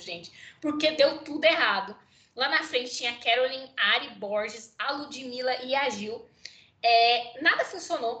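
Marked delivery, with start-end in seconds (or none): 0.0-1.9 talking through nervous laughter mid-sentence. Commenting on a lineup where everything went wrong: nervous laughter while talking. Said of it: "Eu tô rindo de nervoso".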